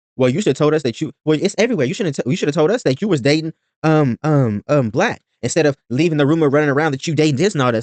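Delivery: ordinary talk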